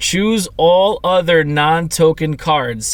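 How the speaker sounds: slow, deliberate, carefully spaced reading. Explaining a card game, the speaker rereads a card's text, slow, deliberate reading. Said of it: "Now I'm reading this slow on purpose".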